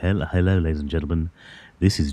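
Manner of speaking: radio announcer voice. Speaker greets ladies and gentlemen in a deep radio voice. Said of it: "radio voice".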